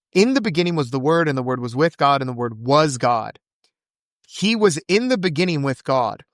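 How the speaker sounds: ordinary talk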